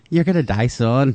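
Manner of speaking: ordinary talk, nothing marked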